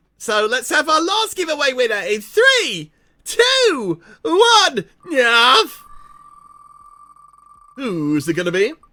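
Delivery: squeaky, very high, loud sing-song put-on voice. Announcing a giveaway winner, the speaker switches to a put-on voice: high-pitched voice. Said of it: "go for a high pitched voice".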